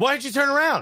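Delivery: shrill, very high, ranting telling-off yell. Retelling a goal reaction where he yells at defenders: imitating Adam McCullough yelling. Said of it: "he starts yelling".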